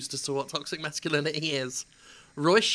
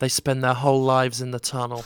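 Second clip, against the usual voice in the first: put-on low, loud, grim, somber, threatening voice; 4 semitones lower, 5 dB louder than usual. Quoting him after a pause, in a mock-somber, menacing voice. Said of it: "then with a somber, menacing voice".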